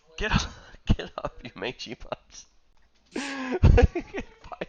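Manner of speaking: very high, very slow, drawn-out bossy yelling. Game narrator voices an enemy commanding his goblin dogs, yelling at the goblin dogs. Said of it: "he'll start t- like yelling at the goblin dogs".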